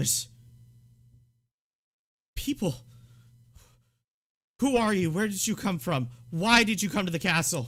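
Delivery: scared, frantic, high and loud rapid barrage. A character pulls his knife and turns on the newcomers, scared and frantic. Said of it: "he's just scared and frantic".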